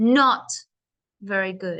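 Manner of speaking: "not" pushed out with heavy force. Answering how the food was: extra force on not. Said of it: "So can you see how I push my voice for this word?".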